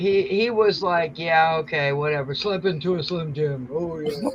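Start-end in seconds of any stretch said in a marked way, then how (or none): 1.2-4.2 reluctant, half-hearted, couldn't-care-less delivery. Imitating Macho Man doing a commercial he did not want to do: reluctant Macho Man impression. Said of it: "he just did not wanna do that commercial".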